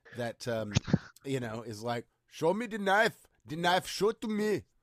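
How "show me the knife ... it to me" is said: put-on high, loud Japanese accent. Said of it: "in a Japanese accent".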